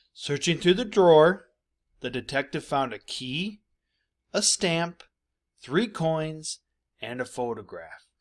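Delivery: short break after every item, at each comma. Teaching commas in a list, reading with a quick pause after each item. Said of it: "Just simply do what it says, and that means take a quick break".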